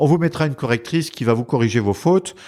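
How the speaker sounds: ordinary talk, nothing marked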